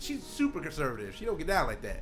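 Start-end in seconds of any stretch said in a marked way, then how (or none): none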